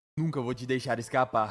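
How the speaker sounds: usual speaking voice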